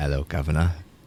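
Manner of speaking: quick, fake, put-on British accent. Answering a chat request to talk in a put-on british accent. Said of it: ""Can you talk in a British accent?"".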